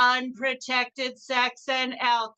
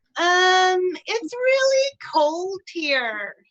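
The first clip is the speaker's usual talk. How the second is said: put-on voice, pitched high and swooping around; 7 semitones higher, 4 dB louder than usual. Doing an impression of Midwest celebrity Laura Ingalls Wilder: Laura Ingalls Wilder impression. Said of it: "this is my impression of local Midwest celebrity Laura Ingalls Wilder".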